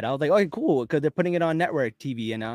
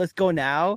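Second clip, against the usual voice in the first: put-on tiny toddler voice; 3 semitones higher than usual. Retelling a crushing movie scene as Floor: Floor's toddler voice. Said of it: "it's like a little toddler saying".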